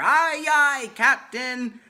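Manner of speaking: put-on very loud, high, all-out group scream of kids. Retelling the kids answering again: imitating kids screaming louder. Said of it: "they scream louder".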